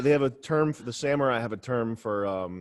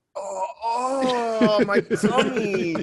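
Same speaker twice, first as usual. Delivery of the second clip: very high, very slow, drawn-out fake pained groan; 11 semitones higher, 5 dB louder than usual. Acting out an excuse to get out of something: mock pained groan. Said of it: "That fucking noise you just made".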